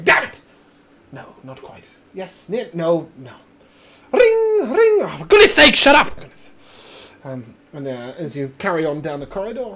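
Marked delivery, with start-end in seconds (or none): 0.0-6.2 very loud, swooping gnome voice all the way through. Narrating a corridor scene with a voice behind the listeners, gnomish voice. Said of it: "what appears to be a gnomish voice behind you".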